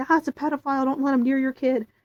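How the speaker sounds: mock high, shrill screaming of a crowd of children. Retelling what kids shout near a mascot: imitating kids screaming. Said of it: "these kids are just screaming".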